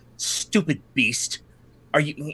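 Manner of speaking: bitter devil voice, spoken bitterly. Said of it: "that is what he says in bitterness on you".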